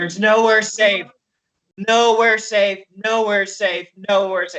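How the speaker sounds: play-acted, sob-choked, uncontrollable sobbing, words repeated. Describing a character who repeats the same words over and over, retelling someone sobbing. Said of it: "He's like sobbing, like uncontrollably".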